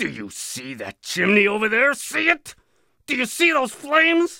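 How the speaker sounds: increasingly harsh, brutal, rising intensity. A man questioning the narrator's group points them to the flames: increasingly brutal tone. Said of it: "His tone of voice became increasingly brutal".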